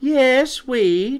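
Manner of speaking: bright, very high chirp. Narrating a character's answer to another character's question, chirped. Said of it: "chirped Quinny".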